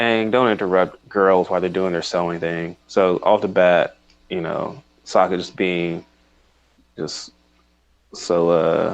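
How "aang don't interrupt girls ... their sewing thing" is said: plain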